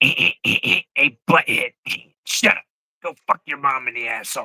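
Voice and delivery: put-on crude cartoon teen voice. Asked which cartoon voices they do, the speaker does a Beavis voice. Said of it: "But Beavis".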